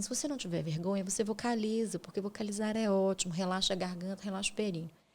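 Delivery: ordinary talk, nothing marked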